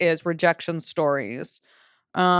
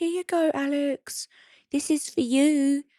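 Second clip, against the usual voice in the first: put-on slow, high-pitched English accent; 8 semitones higher than usual. Retelling handing a love note to a boy on the playground, in an english accent. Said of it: "in an English accent. I was like".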